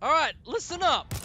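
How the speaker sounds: loud voice, cracking partway through. Speaker calling for attention, voice cracking. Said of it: "My voice just cracked".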